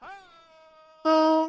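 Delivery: very high, loud wrestler's trademark-style yell. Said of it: "and yells".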